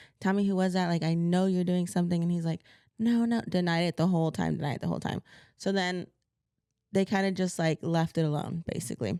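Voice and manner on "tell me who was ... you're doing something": normal talking voice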